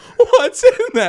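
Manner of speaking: put-on shrill, very loud, full-out child's scream. Retelling a cabin pillow fight, quoting the kid being hit: imitating a kid screaming. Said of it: "Like screaming".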